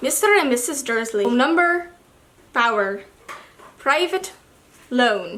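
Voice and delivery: bad, patchy Scottish accent slipping in and out. Reading a bit of a book aloud for listeners, in a patchy Scottish accent. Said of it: "I'm going in and out of a Scottish accent".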